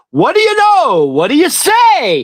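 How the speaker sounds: very high, swooping sing-song voice, drawn out. Retelling a man popping out of an SUV: imitating Anthony's greeting. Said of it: "Like that".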